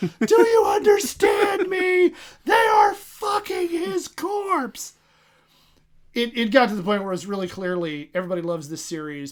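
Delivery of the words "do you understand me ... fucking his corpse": put-on comic scream, higher and louder. Retelling a webcomic where the character, foaming at the mouth, is screaming. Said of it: "and he's screaming".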